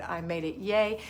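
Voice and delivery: ordinary talk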